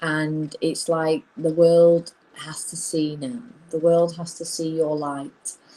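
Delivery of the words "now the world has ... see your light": ordinary talk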